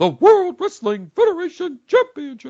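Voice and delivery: booming, high, swooping put-on ring announcer voice. Imagining a ring announcement of a title match: Fink voice. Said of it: "Fink will do it in his Fink voice".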